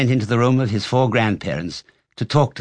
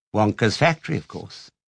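plain

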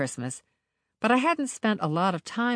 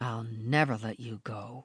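low, quiet, chilling, menacing voice; 6 semitones lower, 6 dB quieter than usual. A man gripping a woman's wrists answers her, menacing tone. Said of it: "His menacing tone chills me to the bone".

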